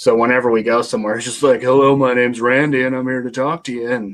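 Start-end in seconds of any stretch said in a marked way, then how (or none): 1.6-3.9 put-on seventies surfer dude voice, old-school beach manner. Describing how Randy introduces himself wherever they go: imitating Randy. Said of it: "Randy's like a nineteen seventies surfer dude".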